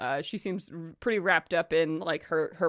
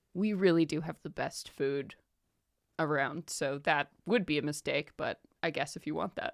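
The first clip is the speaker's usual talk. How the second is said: put-on earnest and serious, quieter; 4 dB quieter than usual. Acting out how she reacts to an order of just water, mock-earnest, serious. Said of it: "in all seriousness, not even like sassy, like true earnest".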